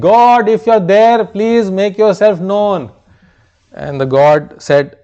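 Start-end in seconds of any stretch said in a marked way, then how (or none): 0.0-2.9 mock loud shout, called out upward. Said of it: "Shouted again".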